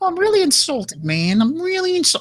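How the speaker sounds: very high, swooping, up-and-down voice. Doing an impression of how John talks: imitating John. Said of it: "that's how John talks".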